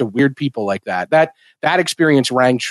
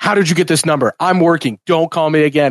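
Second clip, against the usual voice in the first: loud, shouted, dismissive yelling; 3 semitones higher than usual. Retelling a scene where he yells at his sister on the phone: imitating someone yelling. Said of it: "yells at her".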